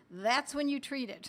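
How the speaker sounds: normal talking voice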